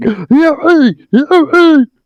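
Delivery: high, panicky, jittery, frantic freak-out. Describing how different characters sound, imitating Storm freaking out. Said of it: "Storm sounds like he's freaking out".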